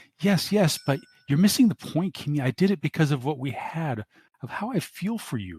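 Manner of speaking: high, swooping, wheedling whine. Pleading with Kimmy after she asks why he hired Shadowrunners; whining. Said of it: "Johnson's face twists in sudden impotent rage. The enormity of his insignificance and impotence are tearing at him, / Mr. / starts to whine".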